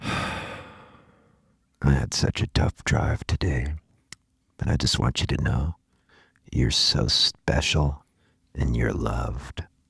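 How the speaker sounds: ASMR voice with lip smacks. Explaining what they like about asmr, doing an asmr voice with lip smacks. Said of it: "you hear their lips snap, smack like this".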